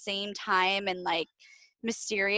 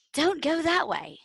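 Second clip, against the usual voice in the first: high-pitched put-on British accent; 7 semitones higher than usual. Speaker recounting a movie's little worm warning her: british accent.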